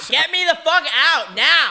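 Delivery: full-lung screaming, very high, very loud, drawn out. Retelling what you yelled at your doctor, re-enacting screaming at the top of your lungs. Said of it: "I was screaming at the top of my lungs".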